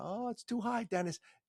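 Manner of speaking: put-on New York accent, very high pitch. Retelling what mom said while looking for tickets: imitating mom's New York accent. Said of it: "has that New York accent".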